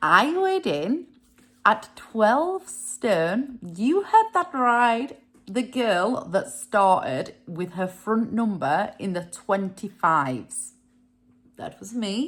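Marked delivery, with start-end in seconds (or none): 0.0-3.6 slow, deliberate, drawn out word by word. Speaker repeats a statement for listeners: said slowly. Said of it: "Let me just say that slowly for you".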